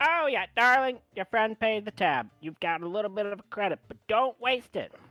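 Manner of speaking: very high, very loud, shrill gnome barmaid voice. Voicing the gnome barmaid telling a player the tab was paid: gnome barmaid voice. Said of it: "She looks up, she goes".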